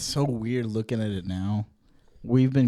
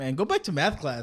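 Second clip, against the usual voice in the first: dorky, nerdy delivery; 4 semitones higher, 5 dB quieter than usual. Imitating someone who said to go back to class: imitating Mason as a nerd. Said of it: "He sound like a nerd".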